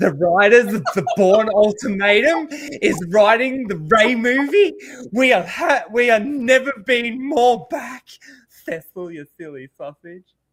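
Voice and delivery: loud, camped-up put-on camp voice.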